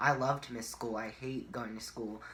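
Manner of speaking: ordinary talk, nothing marked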